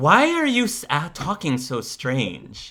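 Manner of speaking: very nasty snide tone, high and swooping. Voicing a character on a date asking about strange speech: very nasty tone. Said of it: "she says that in a very nasty sort of way".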